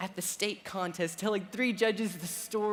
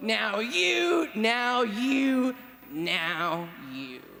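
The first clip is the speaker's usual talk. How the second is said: loud, swooping storybook witch voice, now drawn out; 5 dB louder than usual. Recalling reading the Missus Stein poem aloud, in a Missus Stein witch voice. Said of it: "I did my witch voice for Missus Stein".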